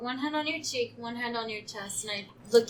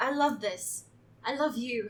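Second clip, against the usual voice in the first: slow, teary voice right at the edge of tears. Voicing a character moved by a gift, on the verge of tears. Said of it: "Tears well up in her eyes".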